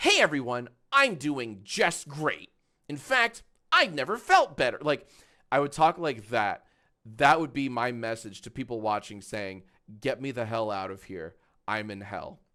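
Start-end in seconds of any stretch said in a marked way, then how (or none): 0.0-4.8 online video host voice, bright and bouncy. Answering a question, showing how he'd talk to viewers: YouTuber voice. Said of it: "I would turn on my YouTuber voice".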